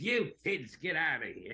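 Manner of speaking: put-on high, swooping little old man character voice. A voice actor explaining how a catchphrase unlocks a character, in a little old man voice. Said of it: "Then that becomes the catchphrase".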